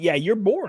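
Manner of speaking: ordinary talk, nothing marked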